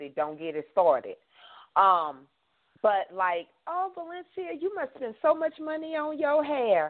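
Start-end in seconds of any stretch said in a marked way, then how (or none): 3.7-6.9 acted, very high, sugary, sweetly snide tone. Imitating people who remark on her hair: nice nasty tone. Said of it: "say that in a nice, nasty way".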